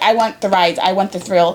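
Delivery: ordinary talk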